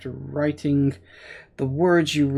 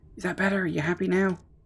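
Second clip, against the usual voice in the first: hushed whispering voice, higher pitch; 4 semitones higher, 4 dB quieter than usual. Answering a librarian who says to be quiet: whispering. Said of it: "I'm whispering".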